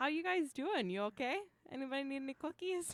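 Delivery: put-on high-pitched Minnesota accent voice. Voicing how Will sounds in your head, Minnesota hockey mom voice. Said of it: "he's got a Minnesota hockey mom voice".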